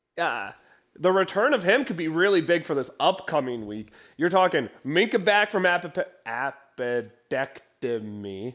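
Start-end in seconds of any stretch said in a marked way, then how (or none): 4.2-8.6 slow, low, deliberate, careful word-by-word delivery. Speaker discussing a Steelers player's return from surgery, said slowly. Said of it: "I had to say it slow".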